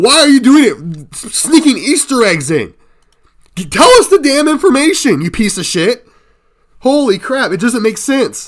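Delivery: very high, very loud, shrill, throat-straining angry yell. Ragging on a video being commented on, yelling. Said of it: "My throat hurts after yelling like that".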